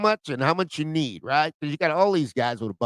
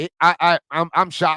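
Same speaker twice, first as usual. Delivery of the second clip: shocked, stammering delivery. Reacting to news of a broadcasting deal, stuttering in shock. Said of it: "You see I'm stuttering?".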